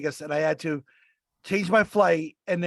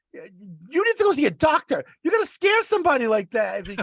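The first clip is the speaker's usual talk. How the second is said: put-on terrified old woman voice, high and swooping; 8 semitones higher, 4 dB louder than usual. Retelling what an old woman said after the speaker was helped up, imitating a terrified old woman. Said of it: "she's like terrified".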